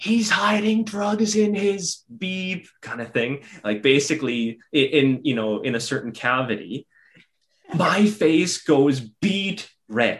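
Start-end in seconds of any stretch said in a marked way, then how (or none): 0.0-2.7 put-on shouted delivery, very high-pitched yell. Retelling what a teammate yelled from the back seat: imitating someone yelling. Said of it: "he yells out".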